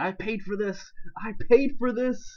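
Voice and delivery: mock bitter, sarcastic, high angry yell, repeated. Recalling what they kept yelling when upset, retelling a sarcastic, angry yell. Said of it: "all sarcastic and angry".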